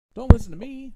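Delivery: high, loud, excited outburst.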